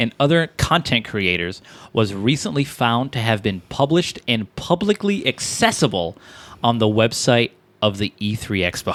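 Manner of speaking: normal talking voice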